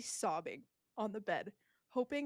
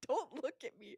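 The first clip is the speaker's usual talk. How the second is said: mock tearful crying, words pushed out through tears; 4 semitones higher than usual. Retelling what she said to Midas while still in pain, imitating crying. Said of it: "I'm crying still".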